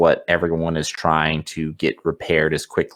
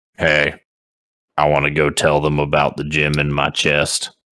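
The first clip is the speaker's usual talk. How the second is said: grunting character voice; 2 semitones lower than usual. Storyteller voicing Asronical, the first to see them, Asronical grunting. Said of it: "he just kind of grunts and says".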